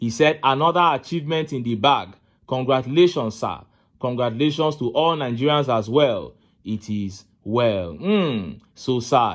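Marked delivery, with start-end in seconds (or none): none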